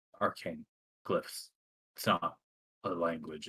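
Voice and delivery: mumbling under breath. A player in character answers a question, quiet muttering. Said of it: "Sir, I can hardly hear you".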